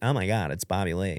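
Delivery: mocking, teasing, jeering, played-up exclamation. Retelling how a woman mimicked him to make fun of him: imitating a woman mocking him. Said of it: "she just spot on mimics me".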